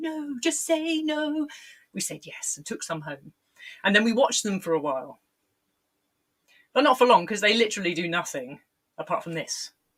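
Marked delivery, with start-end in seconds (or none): 0.0-1.5 very slow, hushed, eerie ghost voice. Recalling being offered stick insects, voicing the warning in your head: ghostly voice of Zamo. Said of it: "the ghostly voice of Zamo in my head going".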